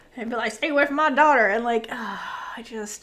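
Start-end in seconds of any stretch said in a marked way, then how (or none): 0.5-1.5 put-on southern American accent, man's voice. Imitating a character warning someone off his daughter: conservative southern man voice. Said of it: "that conservative Southern man vibe".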